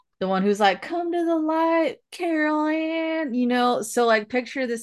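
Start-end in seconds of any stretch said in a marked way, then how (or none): 0.8-3.3 put-on drawn-out, high, slight Southern accent. Reminding listeners of the psychic in Poltergeist, in a vaguely Southern Zelda Rubinstein voice. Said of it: "tiny little lady with like vaguely Southern".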